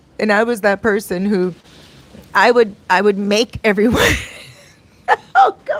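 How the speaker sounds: giggling, laughing through words, swooping pitch. Recalling making everyone's gift, laughing while talking. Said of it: "Sorry, I'm laughing at myself".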